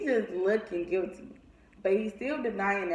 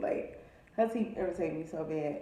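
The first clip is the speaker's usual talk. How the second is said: ordinary talk, nothing marked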